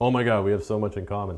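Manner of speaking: mock excited, sarcastic tone. Retelling own line to a new acquaintance: retelling own sarcastic line. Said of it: "this sarcasm is killing right here".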